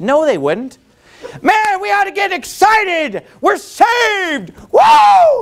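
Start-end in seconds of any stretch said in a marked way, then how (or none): 1.4-5.4 very high, drawn-out, swooping, jubilant excited shouts. Showing the congregation an excited shout nobody would mind: excited yelling. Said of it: "so offended by that yelling".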